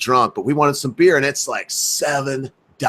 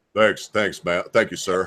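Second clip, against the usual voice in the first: deepest, low voice dropped to its very bottom; 4 semitones lower, 4 dB quieter than usual. Retelling how a man he stood in line with answered people, in his deepest voice. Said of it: "he would turn around in his deepest voice".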